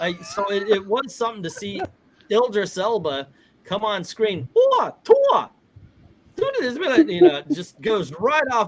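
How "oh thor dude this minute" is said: shrill, very high-pitched, loud cry. Imitating the Thai dub of Idris Elba: high-pitched Chris Tucker-like voice. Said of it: "really high pitched".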